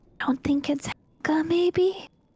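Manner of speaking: sidelong stage whisper. Saddling up next to another character while following, whispering in character. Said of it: "saddle up next to Mal and whisper".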